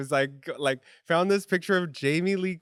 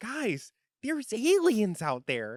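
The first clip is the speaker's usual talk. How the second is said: high, lively, swooping announcer-style delivery; 6 semitones higher than usual. Quoting a meme line, imitating Tokyo Toni. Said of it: "It's Tokyo Toni".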